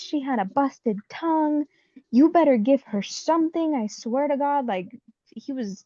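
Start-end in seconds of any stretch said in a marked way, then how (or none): 0.0-4.7 high-pitched, angry screaming, going off. Retelling a husband screaming at nurses to treat her: imitating husband screaming. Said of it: "And he was screaming at them".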